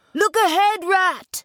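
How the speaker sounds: abrupt, sudden cry, very high-pitched. The mole warns the rat rowing their boat; cried suddenly. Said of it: "cried the mole suddenly".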